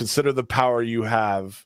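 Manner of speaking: ordinary talk, nothing marked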